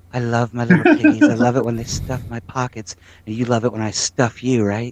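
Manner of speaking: deep, sultry, sexy radio-host voice. Addressing the little piggies directly, in a sexy radio voice. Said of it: "sexiest radio voice".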